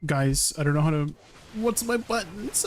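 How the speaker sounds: flustered, rising, panicked tone, losing the thread. Asking the others which buttons to press mid-fight: panicking. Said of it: "I'm panicking".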